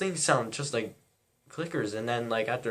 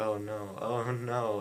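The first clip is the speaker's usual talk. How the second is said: put-on mumbling under the breath; 3 dB quieter than usual. Retelling own reaction during a movie scene: imitating mumbling under breath. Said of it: "I was mumbling under my breath".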